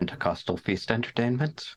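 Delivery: muttered aside in a stage whisper. Voicing a character muttering a remark during a duel challenge: whispering under his breath. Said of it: "Rod kind of whispers under his breath".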